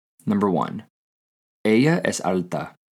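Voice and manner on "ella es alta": statement intonation on ella es alta. In a Spanish lesson, the speaker gives the statement version of an example, plain statement intonation. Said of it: "The first one will also be a statement".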